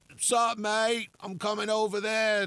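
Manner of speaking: very high put-on English accent. Imitating people who ask about visiting, in a put-on English accent. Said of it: "I'm not going to play the English people like that".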